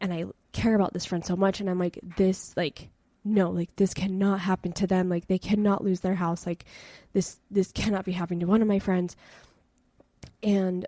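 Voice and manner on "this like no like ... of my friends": acted panicked voice. Retelling watching a friend's house burn: retelling own panicked words. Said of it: "I'm panicking".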